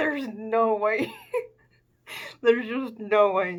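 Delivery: suppressing laughter through the words. Commenting on names they hated down there, while holding back a laugh. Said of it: "I'm trying not to laugh".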